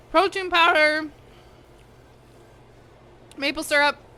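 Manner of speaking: talking through a mouthful of food. Tasting something good, the speaker keeps talking with mouth full. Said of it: "I'm talking my mouth full".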